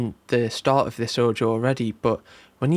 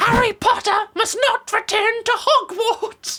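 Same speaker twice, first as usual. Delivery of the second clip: very high-pitched voice; 3 dB louder than usual. After joking about sounding like Dobby, doing it on purpose: Dobby impression. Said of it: "Why did I sound like Dobby there?".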